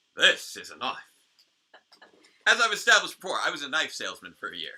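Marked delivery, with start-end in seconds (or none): 0.2-1.0 put-on Australian accent. Quoting a knife line from Crocodile Dundee: Crocodile Dundee Aussie accent. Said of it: "your attempt at an Aussie accent".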